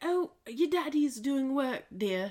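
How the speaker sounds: terrible fake British accent. Retelling the mom's words in a story, in a terrible british accent. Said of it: "It was a terrible British accent".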